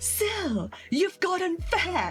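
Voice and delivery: put-on shrill, loud, high shouted American accent. Retelling a woman yelling at her across the street: imitating a loud american yell. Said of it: "she yells out in a very loud American voice".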